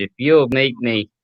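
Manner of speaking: ordinary talk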